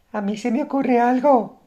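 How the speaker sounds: put-on high, girl-like voice. Narrator reads a chubby boy answering the group's call for ideas, in a high girlish voice. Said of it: "con una voz aguda como de niña".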